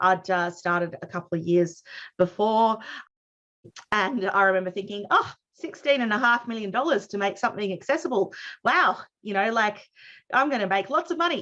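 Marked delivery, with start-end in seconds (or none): 5.1-11.4 put-on, ironic, sarcastic excitement. Retelling a past thought about accessibility money: retelling own thought sarcastically. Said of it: "just in case you don't get my sarcasm".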